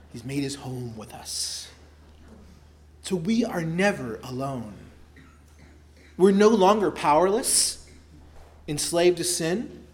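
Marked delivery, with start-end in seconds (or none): 0.1-1.7 put-on Scottish brogue, lower pitch, quieter. Speaker repeating a phrase first heard from Sinclair Ferguson, in Sinclair Ferguson impression. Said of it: "It sounds so much better in a Scottish brogue".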